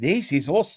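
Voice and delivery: terrible, clumsy put-on French accent. Quoting what they were actually saying, in a terrible French accent. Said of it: "That was a terrible French accent".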